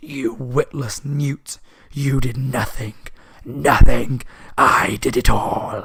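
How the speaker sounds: really creepy voice, very slow and loud. Retelling a story, speaker voices the voice that spoke up, really creepy. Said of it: "the really creepy voice".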